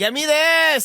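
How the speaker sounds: put-on very high, loud, childish little-kid voice. Retelling talking over Eric while he ordered, talking like a child. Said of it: "I kept talking like a child".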